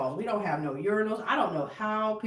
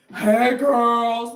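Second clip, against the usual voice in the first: very loud, big comic shout; 3 semitones higher, 11 dB louder than usual. Acting out someone greeting the girls in a bathroom: Jim Carrey-like voice. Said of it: "you sound like Jim Carrey".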